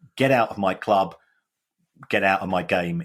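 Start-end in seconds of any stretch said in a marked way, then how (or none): none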